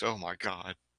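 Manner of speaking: mock panicked voice. Imitating another speaker's reaction to something in the fridge: imitating someone panicking. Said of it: "You went into panic mode".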